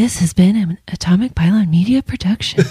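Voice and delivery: gentle, soft public-radio announcer voice. Redoing the podcast's production credit on the sign-off, NPR voice. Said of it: "this is my NPR".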